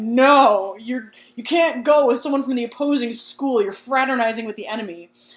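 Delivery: very loud angry outburst, drawn-out no. Recapping the story, acting out Ron objecting to her date, mock super-angry Ron. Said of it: "Super angry".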